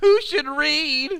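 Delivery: very high, loud, whiny nerd voice. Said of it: "we'll use my whiny nerd voice".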